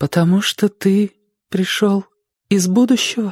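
frightened voice, pitched way up. A woman turns to the narrator and asks him a question, frightened voice. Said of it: "испуганным голосом спросила она".

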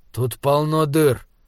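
ordinary delivery, nothing marked

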